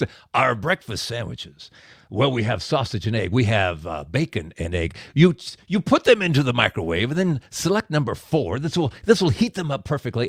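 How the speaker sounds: put-on gravelly man's voice. Retelling how a guy offered the grand tour, imitating a gravelly-voiced guy. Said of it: "I hear this gravelly voice guy".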